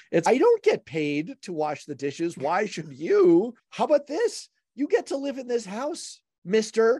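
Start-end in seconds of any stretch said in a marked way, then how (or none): 3.7-7.0 put-on very high, old-sitcom parent scolding tone. Discussing kids' chores, speaker plays a parent addressing a child: Brady Bunch parent voice. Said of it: "I sound like the Brady Bunch".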